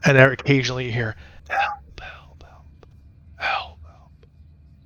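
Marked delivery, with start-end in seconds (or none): 1.5-4.3 slow, faint, drawn-out, ghostly whispered calls. Narrating cries for help still heard in the wind, faint, not as loud. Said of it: "but not as loud".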